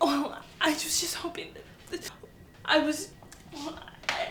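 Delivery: crying while talking. Answering a coworker's question about crying at work, crying while talking. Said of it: "Are you crying?".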